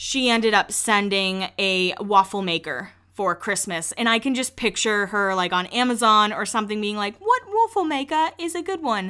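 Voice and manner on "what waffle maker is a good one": very high-pitched, badly done put-on British accent. Picturing the Queen shopping on Amazon, in a horrible British accent. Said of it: "Horrible accent".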